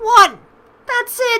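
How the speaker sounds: loud, high, shocked, disbelieving shout.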